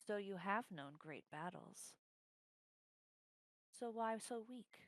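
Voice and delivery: creeping, sneaking voice close in the ear. Voicing a voice that creeps in over a soldier's shoulder: creeping voice in your ear. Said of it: "you hear this voice creep in".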